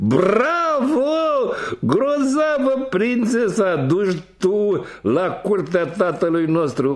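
very high, scornful, mocking, laughing guffaw. Two older brothers see their youngest brother arrive with a cat, guffawing. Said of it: "ziseră hohotind cei doi".

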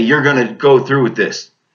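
ordinary talk

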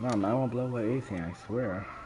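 threatening voice with killer edge. Promising a teammate not to blow anything up: sounding like wanting to kill. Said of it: "that voice sounds like you wanna kill me".

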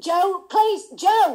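furious, very loud, high angry outburst. Trying to stop joe in the middle of his accents, angry. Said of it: "you're angry".

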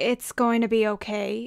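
usual speaking voice

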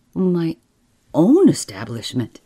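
ordinary talk

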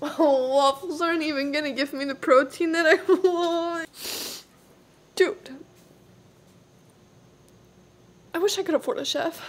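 tearful, actually crying. Talking to viewers about what to cook, actually crying. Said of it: "I'm actually crying".

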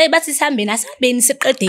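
normal talking voice

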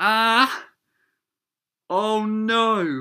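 piercing, very loud, very high scream, not drawn out. Reacting suddenly while reading a story aloud: screaming loudly.

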